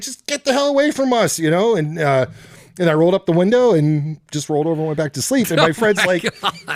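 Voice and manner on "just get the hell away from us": acted, shrill, very high-pitched screaming. Telling a story about a woman at a truck, retelling own scream. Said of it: "I'm screaming".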